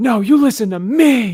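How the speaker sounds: put-on very high, temper-lost outburst, me drawn out. Speaker reading the dialogue acts out Cyclops, imitating Cyclops losing his temper. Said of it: "losing his temper like this".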